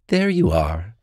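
plain

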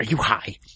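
hushed, secretive, private whisper. Retelling how a store clerk leaned forward and asked: imitating a whispered question. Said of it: "she leans forward and whispers".

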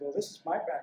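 ordinary delivery

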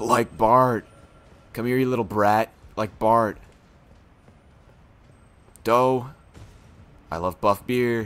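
cartoon dad voice in surfer style. Doing Simpsons characters as surfers, now Homer Simpson as a surfer. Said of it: "Homer Simpson. If he was a surfer".

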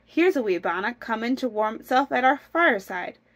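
ordinary delivery, nothing marked

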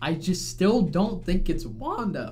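voice breaking, cracking on the words. Asking some basic questions about what is going on, voice cracking. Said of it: "voice crack".

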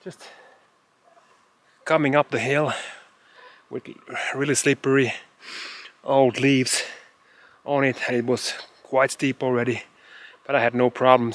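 slightly out of breath. Speaker just came up a steep, slippery hill, a little out of breath. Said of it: "I'm a little bit out of breath".

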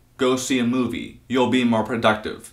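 ordinary talk, nothing marked

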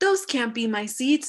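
plain

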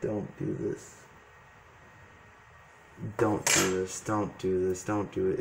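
low, soft, hushed voice.

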